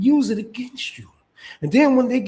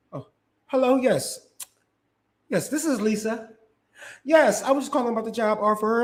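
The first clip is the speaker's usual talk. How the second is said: prim, proper, put-on polite phone voice; 2 semitones higher than usual. Retelling a parent switching voice to answer a call: imitating a parent's code-switched phone voice. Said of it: "it kick in like an instinct".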